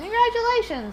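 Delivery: high, sing-song, cheery, friendly tone.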